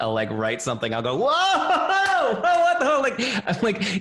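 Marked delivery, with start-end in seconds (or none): 1.2-3.0 very high, loud, delighted, joyful whoop. Retelling a reaction while writing the book: imitating own joyful yelling. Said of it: "yelling in appreciation".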